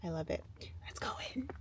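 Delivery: breathy, very soft, hushed whisper under the breath. Filming while changing in the Trader Joe's bathroom, whispering. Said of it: "I don't know why I'm whispering".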